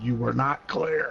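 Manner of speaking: token mock shout, firm, pointed and emphatic. Retelling how the three answered the twenty's apology: imitating a real loud voice. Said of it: "the three in a real loud voice said".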